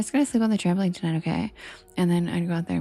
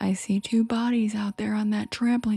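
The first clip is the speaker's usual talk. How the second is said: put-on stern, loud calling out; 3 semitones higher than usual. Retelling how dad reacted from inside the house: imitating dad yelling. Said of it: "he just yelled".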